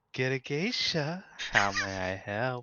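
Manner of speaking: breathy, airy voice full of breath. Playing the geisha service answering the phone, in a breathy voice. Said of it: "Anna's answering in a breathy voice".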